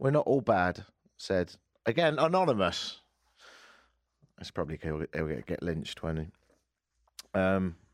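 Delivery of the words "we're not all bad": ordinary talk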